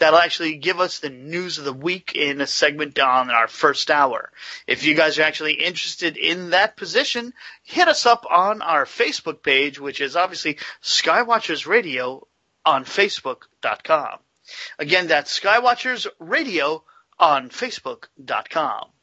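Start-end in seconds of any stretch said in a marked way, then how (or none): 4.7-18.8 salesy, pitchman-style radio infomercial voice. Inviting listeners to apply on the facebook page: sounding like an infomercial. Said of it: "I know I sound like an infomercial".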